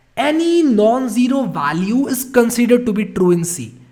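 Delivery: loud emphatic shout. Speaker explaining C to viewers, stressing a key rule by shouting for emphasis. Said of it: "I'm shouting like this so that I can emphasize".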